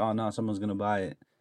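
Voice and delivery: normal talking voice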